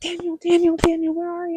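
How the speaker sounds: high, frantic, panicked repeated calling out. Retelling waking in the water and calling for someone: imitating her own panic. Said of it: "I start panicking".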